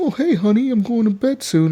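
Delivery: very high, prim and proper, sweet voice. Mocking how Captain Hook now talks at home: imitating Captain Hook being all nice. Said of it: "being all nice and shit".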